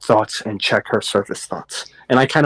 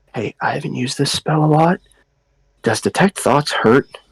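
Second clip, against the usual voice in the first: whispering; 3 semitones higher than usual. Whispering in character to another character about a spell: whisper. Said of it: "I whisper to him".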